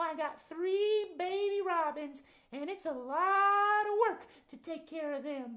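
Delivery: high puppet voice with drawn-out "lot". Voicing Mama Robin, who answers that she is busy: Mama Robin puppet voice. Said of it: "Mama Robin?".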